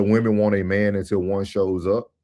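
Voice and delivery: ordinary talk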